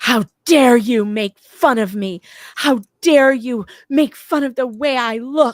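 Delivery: put-on furious scream, high, loud, close to tears. Speaker quotes a woman from a recording of her, imitating an angry scream. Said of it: "an audio of her screaming".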